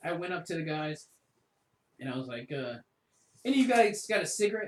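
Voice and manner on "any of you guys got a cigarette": put-on very loud, aggressive angry tone. Recounting asking the guys for a cigarette to start a fight, retelling an angry demand. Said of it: "In a real angry voice, like demanding a cigarette".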